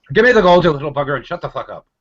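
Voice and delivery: shrill, very high, loud put-on Irish leprechaun voice. Playing a leprechaun guarding gold, joking with friends: put-on Irish leprechaun accent. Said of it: "you have to put up with that accent".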